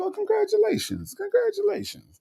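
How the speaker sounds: very high-pitched voice. Retelling how a judge reacts to someone's past problem: Judge Mathis impression congratulating. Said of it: "he gonna be like".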